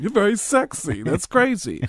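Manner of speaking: high comic voice with swooping pitch. Doing an impression of Tracy Morgan: Tracy Morgan impression. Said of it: "Tracy Morgan".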